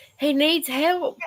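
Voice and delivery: slow shout. Retelling what someone hollered while they watched it together, retelling a holler. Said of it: "Kenny's hollering".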